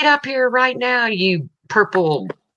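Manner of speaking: high, mock bossy tone.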